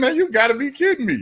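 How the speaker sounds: fake laughing incredulity. Recounting being asked about a drug deal and his car: retelling laughing disbelief. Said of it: "I literally started laughing".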